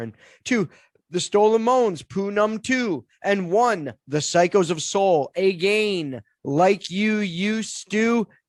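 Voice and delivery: chart countdown radio DJ announcer voice. Reading out the top ten countdown, numbers two and one: radio announcer voice. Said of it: "do my radio voice more".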